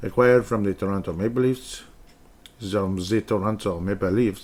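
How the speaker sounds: bad, incorrect put-on French accent. Speaker announcing a hockey player joining Minnesota, in a bad French accent. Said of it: "I'm not even doing the accent correctly".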